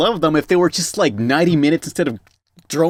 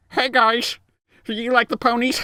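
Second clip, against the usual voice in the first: bad put-on manchild voice, higher; 8 semitones higher, 3 dB quieter than usual. Doing a Pee-wee Herman impression, asking about the ponies: worst Pee-wee Herman impression.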